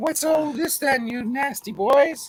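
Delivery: cute mock British accent. Greeting the others after being teased about it: cute little british accent. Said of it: "hit us up with a cute little British accent".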